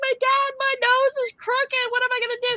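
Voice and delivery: tearful, crying, pleading tone. Retelling crying to dad after breaking nose as a child: imitating own past crying. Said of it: "I'm crying to my dad".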